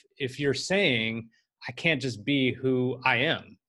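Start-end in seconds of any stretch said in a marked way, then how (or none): none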